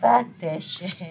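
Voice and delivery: speaking through loud laughter.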